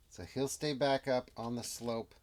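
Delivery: ordinary talk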